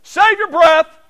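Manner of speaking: shrill, very loud outburst. Recalling a man cutting off a worshipper mid-service, retelling a raised voice. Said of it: "Nick raises his voice and says".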